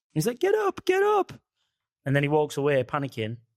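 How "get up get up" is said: very high-pitched, crying, pleading voice. Retelling a show's scene with Ed Gein and his brother, in a high-pitched Ed Gein voice. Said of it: "he's got a real high pitched voice like this".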